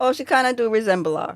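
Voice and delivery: ordinary talk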